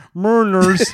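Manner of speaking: booming, loud, mocking voice. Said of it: "I was making fun of".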